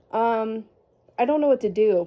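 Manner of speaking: ordinary delivery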